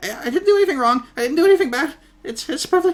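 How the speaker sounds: dazed, panicky, very high-pitched mumbling babble. Playing the goblin Droop, asked what he was doing: panicky mumbling. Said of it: "dazed and confused and a little panicky".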